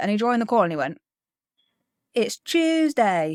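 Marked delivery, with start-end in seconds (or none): 2.1-3.4 over-the-top, exaggerated fake British accent. Retelling a friend joining the call: imitating an exaggerated fake British accent. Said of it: "no one in England sounds like that".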